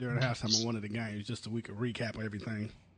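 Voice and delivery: low, quiet, sinister voice.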